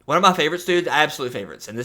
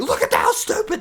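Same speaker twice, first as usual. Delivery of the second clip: panicky, freaked-out exclamation, acted out. Imitating a friend in an earpiece freaking out over a PowerPoint: imitating someone freaking out. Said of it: "Hearing you freak out over it".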